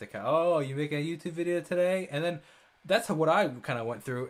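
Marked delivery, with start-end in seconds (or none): 0.1-2.1 snide, mocking, sarcastic tone. Retelling what friends said about the channel: imitating a sarcastic remark. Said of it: "made sarcastic".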